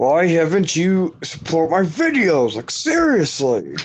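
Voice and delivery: talking through tightly clenched, gritted teeth. Showing how someone talks without moving their mouth, talking through clenched teeth. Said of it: "you're talking through your teeth".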